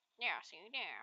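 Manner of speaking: put-on rude jerk character voice. Demonstrating the voice he gave a character, in a jerk character voice. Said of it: "That's the kind of voice I gave him".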